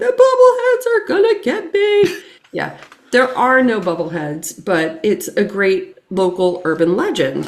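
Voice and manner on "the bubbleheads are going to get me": frightened, shrill, very high screaming yell. Retelling being alone in the truck bed on Bubblehead Road, reenacting a scream. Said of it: "I'm screaming and I'm yelling".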